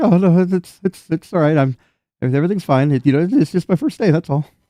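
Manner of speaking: nervous stammer. Retelling how the guy replied to the speaker's reassurance; imitating a stammering guy. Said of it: "the guy just begins to stammer".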